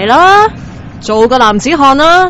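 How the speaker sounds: loud, high, brutal goading.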